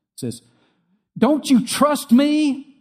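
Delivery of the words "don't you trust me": very high, shrill, drawn-out frustrated angry outburst. Parent retells a child's reply after being told she can't go: acting out an angry outburst. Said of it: "She got very angry with him".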